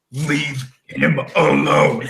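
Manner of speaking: very deep voice, dropped far down. Narrating a character who stands up after being hit, in a really deep voice. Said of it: "his voice gets really deep".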